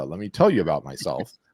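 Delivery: ordinary talk, nothing marked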